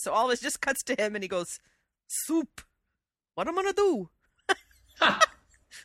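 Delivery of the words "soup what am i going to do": high, panicked, exaggerated Italian accent. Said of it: "imitating a bad Italian accent".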